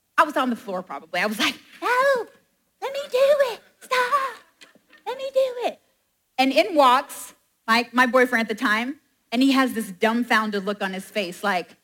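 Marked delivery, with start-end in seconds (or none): 1.9-5.8 all-out, full-on voice, very high pitch. Retelling goofing off with dad, in a full-on Stuart impression. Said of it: "in a full-on Stuart impression".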